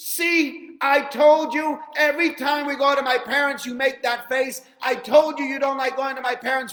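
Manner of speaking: very loud, very high, shrill, berating scream. Retelling a cab ride story, a wife in the back seat: imitating a wife screaming. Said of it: "Wife suddenly from behind starts screaming".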